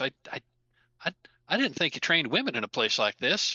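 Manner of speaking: hushed stage whisper. Voicing a character who addresses someone at a gym: half-whispering. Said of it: "and just whispers".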